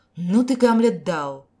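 indignant. The red-haired woman, told to pose as the narrator's lover, reacts indignantly. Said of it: "возмутилась рыжая".

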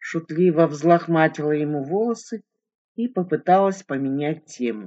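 plain reading voice

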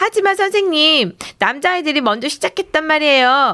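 high, indignant, protesting shout. A child protests to the teacher during a backstage squabble, indignant shout. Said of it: "억울하다는 듯 소리쳤어요".

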